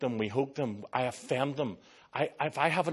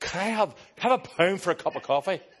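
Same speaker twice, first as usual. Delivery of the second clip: put-on loud, drunk, boozy Scottish accent, well done; 6 semitones higher, 6 dB louder than usual. Retelling what a man who came up to him asked, in a Scottish accent. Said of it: "in the best Scottish accent".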